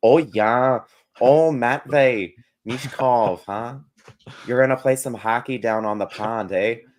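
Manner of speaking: put-on Wisconsin accent. Joking after being told the Wisconsin side shows: put-on Midwest accent. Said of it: "I promise I won't do accents".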